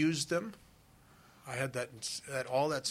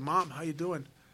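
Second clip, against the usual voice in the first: ordinary talk, nothing marked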